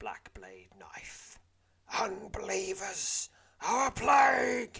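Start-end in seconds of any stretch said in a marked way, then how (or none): 1.9-4.8 very shrill, very loud, high, drawn-out hiss. Reading a gamebook scene, the village elder lunging with a knife: hissing. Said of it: "he hisses".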